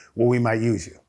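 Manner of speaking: ordinary talk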